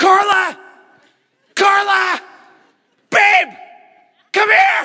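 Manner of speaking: very high, very loud drawn-out scream. Retelling calling out to the wife late at night, retelling a scream. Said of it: "I start screaming".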